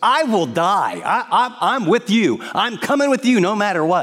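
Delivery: mock swaggering, boastful bravado, high and drawn out. Retelling Peter's vow at the supper to follow Jesus: acting out Peter's bravado. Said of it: "with bravado".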